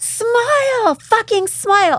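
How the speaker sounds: put-on very high, belligerent drunk yelling, word smile drawn out. Retelling how a drunk girl next to her screamed in her ear, imitating the scream. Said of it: "the girl next to me was screams in my ear".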